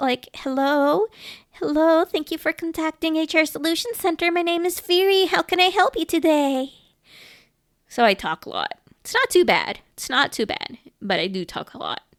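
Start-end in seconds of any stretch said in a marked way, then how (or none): 0.3-6.7 polite, higher-pitched customer service phone-agent voice. A streamer showing viewers how she answers at her customer service job, customer service phone voice. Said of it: "I'm still customer service".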